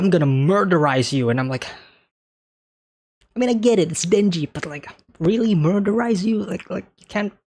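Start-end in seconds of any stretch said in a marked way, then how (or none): none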